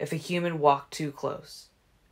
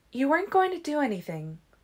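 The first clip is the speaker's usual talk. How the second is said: very high, soothing, calming voice; 11 semitones higher than usual. Alice murmurs to Jasper to soothe his chagrin, soothing murmur. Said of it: "Alice murmured to him".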